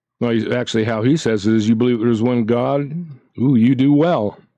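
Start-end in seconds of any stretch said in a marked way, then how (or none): 1.7-4.3 acted sarcastic tone. Speaker acting out how the writer says it, mock-sarcastic retelling. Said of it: "that's a little sar- sarcastic".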